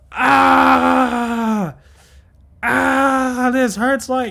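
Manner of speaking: very high, loud, shrill ogre scream, "ah" drawn out. Voicing an ogre just hit by a thrown javelin, screaming in pain. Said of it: "The ogre screams out in pain".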